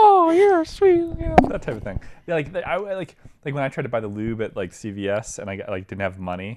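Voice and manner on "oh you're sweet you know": put-on shrill, loud, aged voice. Showing what your own voice sounds like, speak like the old baby on Family Guy. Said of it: "my voice kind of sounds like the old baby on Family Guy".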